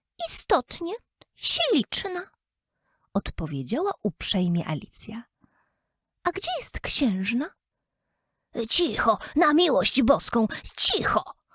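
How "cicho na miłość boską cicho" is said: frightened, mumbling rabbit voice. Narrator reads the rabbit hushing Alice while looking around, muttered in terror. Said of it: "Wymamrotał królik, rozglądając się dookoła z przerażeniem".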